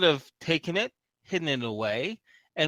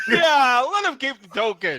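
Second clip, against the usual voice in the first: put-on, big, loud, booming giant voice; 7 semitones higher, 7 dB louder than usual. Speaker acts out another player impersonating a giant: giant voice. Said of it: "impersonate a giant voice".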